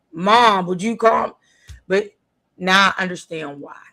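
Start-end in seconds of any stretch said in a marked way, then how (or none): 0.2-1.3 loud, high-pitched scream. Retelling how their mom reacted when they came home late at night: imitating mom screaming. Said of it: "she would just start screaming".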